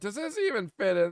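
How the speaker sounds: put-on sarcastic tone. Recounting asking whether something fits, knowing it doesn't, retelling a sarcastic question. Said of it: "it was sarcastic".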